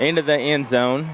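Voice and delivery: ordinary talk, nothing marked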